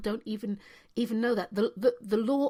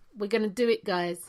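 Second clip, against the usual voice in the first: ordinary delivery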